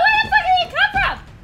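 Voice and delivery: high, loud shriek, laughing and scared.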